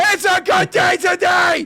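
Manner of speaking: shrill, very high, loud screaming yell. Retelling chats where Izzy answers everything with a scream: imitating Izzy yelling. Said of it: "calm down".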